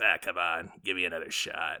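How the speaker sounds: thick, smarmy, ingratiating and wheedling little voice. Imitating Adam Sandler in a movie trailer: swarmy Adam Sandler voice. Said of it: "he's in his little swarmy voice".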